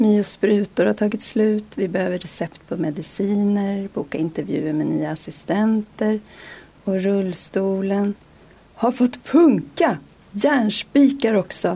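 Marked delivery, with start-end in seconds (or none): 8.7-11.8 calling out in a raised voice. Narrator reading the father's line as he squeezes the wheelchair tire: calling out. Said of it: "ropade pappa".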